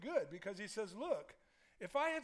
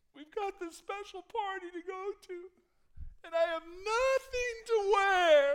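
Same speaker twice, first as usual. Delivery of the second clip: acted, very high, very loud weepy wailing sob; 12 semitones higher, 12 dB louder than usual. Retelling a wife before a party, imitating her crying. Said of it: "she's crying".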